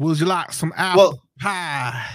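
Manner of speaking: put-on Louisiana accent. Imitating a coach at Easter dinner: Brian Kelly's put-on Southern accent. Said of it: "which accent was Brian Kelly using at this dinner".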